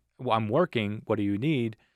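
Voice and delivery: mock yelling, calling out loudly. Retelling being called over while working, the speaker re-enacts a yell over noise. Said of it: "I'm yelling it because there's all this A C going on".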